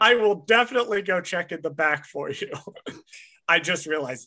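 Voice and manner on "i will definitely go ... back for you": ordinary talk, nothing marked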